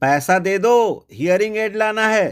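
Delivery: loud high-pitched shout. Retelling what he said to his grandmother, retelling a loud shout. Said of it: "मैंने जोर से कहा".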